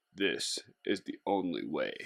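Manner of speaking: very deep, very low, hushed, soft rumble. Describing the only route back to the trailhead: Darth Vader voice. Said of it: "In my best Darth Vader voice".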